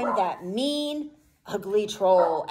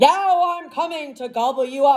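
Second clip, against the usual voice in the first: fairy-tale troll voice, read as a mild roar; 3 semitones higher than usual. A reader voices the troll in the Billy Goats Gruff story, loud roaring troll voice. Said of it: "roared the troll".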